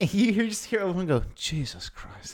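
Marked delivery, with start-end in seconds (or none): 1.3-2.3 muttered, quieter and lower pitch. Imagining Obi-Wan reacting to Anakin's line to Padme, Obi-Wan under his breath. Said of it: "if you could hear Obi-Wan under his breath".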